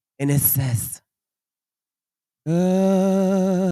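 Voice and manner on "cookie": high, long, drawn-out mystical voice. Retelling a voice heard while sitting in a room: mystical voice. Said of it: "real mystical, kinda like".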